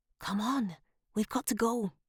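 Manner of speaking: urgent, pressing, high-pitched hiss. Narrator reading a girl urging a boy to leave with her, hissed. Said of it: "she hissed".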